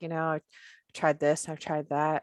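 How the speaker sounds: put-on deadpan delivery. Retelling a comedian's stand-up joke, imitating a deadpan comic. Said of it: "so deadpan".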